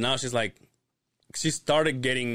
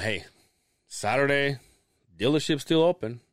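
ordinary talk, nothing marked

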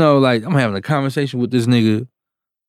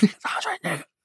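whispering, higher pitch and quieter; 9 semitones higher, 8 dB quieter than usual. Retelling pointing someone out to another person: imitating own whisper.

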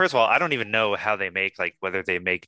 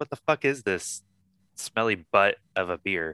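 ordinary delivery

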